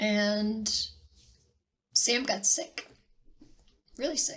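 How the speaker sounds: on the verge of crying. Explaining a delayed announcement to viewers, holding back tears. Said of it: "try to get through this without crying".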